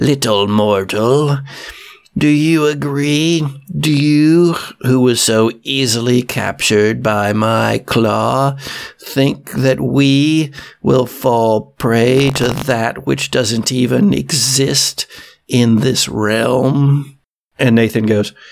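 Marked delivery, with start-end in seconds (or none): 0.0-17.2 taunting werewolf monster voice, speaking down. A storyteller voices a werewolf speaking to the man he holds captive, werewolf voice. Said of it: "He pulls Nathan Redbone closer to his face and says".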